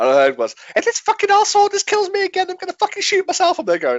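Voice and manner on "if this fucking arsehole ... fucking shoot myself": put-on high-pitched American voice, higher. Retelling what an opponent said over a game headset: imitating high-pitched American voice. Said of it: "high-pitched American voice".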